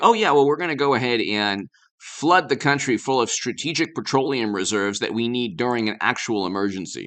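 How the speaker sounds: ordinary delivery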